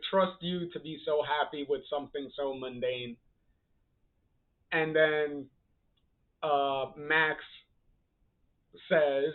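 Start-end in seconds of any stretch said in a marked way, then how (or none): none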